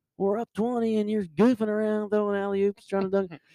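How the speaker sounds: loud shouting.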